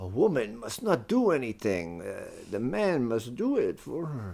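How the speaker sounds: put-on Yiddish-inflected accent. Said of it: "What is that accent now?".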